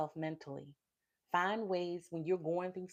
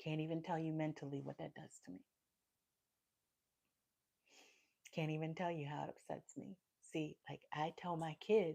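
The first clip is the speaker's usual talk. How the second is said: tearful voice, on the verge of crying; 2 semitones lower, 7 dB quieter than usual. A daughter talking about her mom's failing health, holding back tears. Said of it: "sorry, not trying to cry again".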